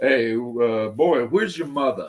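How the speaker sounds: put-on New York city accent. Speaker imitating how New Yorkers like his dad talk, imitating a New York accent. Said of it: "New Yorkers, and I know this because of my dad".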